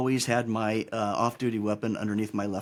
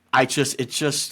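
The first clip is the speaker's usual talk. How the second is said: ordinary delivery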